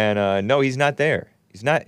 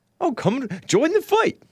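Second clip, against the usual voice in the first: very high, fake sunny cheer, phony bright; 14 semitones higher than usual. Mocking a man's rainbow-flag message, imitating his phony bright voice. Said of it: "his phony, bright voice".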